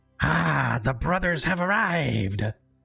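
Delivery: harsh, rough, gruff gravelly voice. Narrating to the players, voicing someone below the bridge: gruff gravelly voice. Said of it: "a very gruff and gravelly voice".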